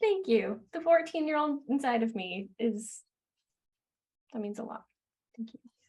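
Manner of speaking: tearful, on the verge of tears. Thanking someone who just said they are proud of her, tearful. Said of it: "You're making me cry".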